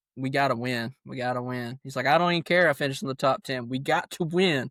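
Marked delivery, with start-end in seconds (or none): none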